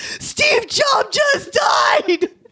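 play-acted shrill, thrilled shout, very high. Retelling how a girl stood up in the cafeteria, reenacting her excited yell. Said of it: "and yelled".

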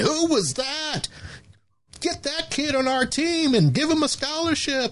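very high, excited screaming. Retelling how a lady coach reacted to a dunk: imitating someone screaming. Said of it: "a lady on the other side of the gym started screaming".

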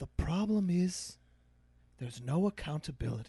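put-on light, mild Scottish accent, slow and unhurried. Retelling what an old guy said after shaking his head, light scottish accent. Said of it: "Guy with a light Scottish accent".

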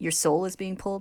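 plain

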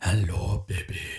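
put-on sultry, deep, seductive, thick Italian accent. Retelling a voice heard from a phone, mock seductive Italian accent. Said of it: "thick accent ... very deep, seductive tone".

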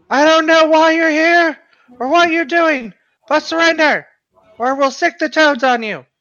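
very high, ringing in-character shout. Calling on the enemies in a fight to surrender: in-character shout. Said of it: "can I shout one thing real quick".

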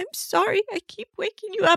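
put-on tearful sobbing voice, very high-pitched. Retelling how Penny apologized at night for waking her: imitating Penny crying. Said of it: "she's crying".

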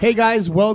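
very loud. Greeting the audience at the start of a live episode, too loud. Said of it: "It's too early to be that loud".

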